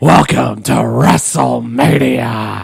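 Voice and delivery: raspy voice like a promoter. Answering the co-host's hope for the Vince McMahon voice: Vince McMahon voice. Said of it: "do the Vince McMahon voice".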